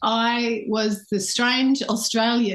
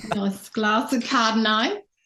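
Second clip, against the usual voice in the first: put-on strong Australian accent. Showing off an Aussie sound, doing a Kath and Kim accent. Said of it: "Kath and Kim, I'm really good at that".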